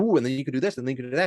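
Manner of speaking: gushing, excited, rattled-off talk, speeding up. Describing giving a talk on an exciting topic: imitating own speeding-up talk. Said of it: "start talking faster and faster".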